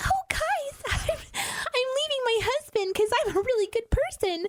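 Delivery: pitched right up to the top. Speaker describes how Rachel talks in the pilot episode: Rachel's high-pitched voice. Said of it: "talks like in this high-pitched voice".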